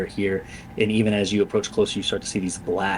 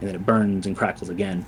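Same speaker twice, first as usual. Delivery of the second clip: ordinary delivery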